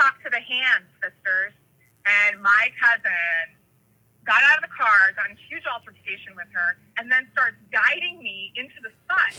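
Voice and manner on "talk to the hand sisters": plain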